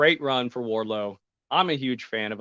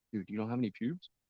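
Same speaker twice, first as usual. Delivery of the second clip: barely audible, very soft half-whisper; 11 dB quieter than usual. Retelling what one man half-whispered to another, imitating a half-whisper. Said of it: "I know he whispers like".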